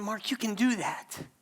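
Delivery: soft, hushed stage whisper, close in. Acting out God half-whispering in his ear: imitating a half-whisper. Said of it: "Just whispering in my ear".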